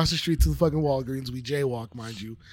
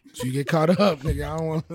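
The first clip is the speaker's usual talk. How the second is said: normal talking voice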